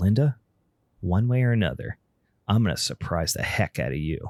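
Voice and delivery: ominous, foreboding, sinister delivery. Retelling a line from Ted the puppy to Linda: imitating Ted the puppy's sinister line. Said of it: "and he says it just like this".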